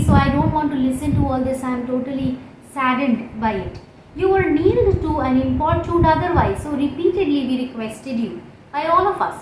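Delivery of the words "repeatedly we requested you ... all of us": ordinary talk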